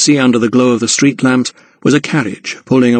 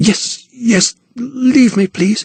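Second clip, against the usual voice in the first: breathless, out of breath, higher; 10 semitones higher than usual. Reading a novel aloud, a frightened woman begging to be left alone: breathless. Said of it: "she said breathlessly".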